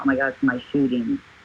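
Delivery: ordinary delivery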